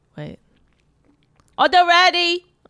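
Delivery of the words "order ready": put-on fake Chinese accent, much higher pitch. Asked by a co-host to do a chinese accent, use a put-on chinese accent. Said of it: "Do Chinese accent".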